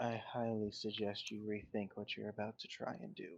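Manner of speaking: very hushed tone. A character with a dagger at someone's side urges them to talk, very hushed tone. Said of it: "In a very hushed tone".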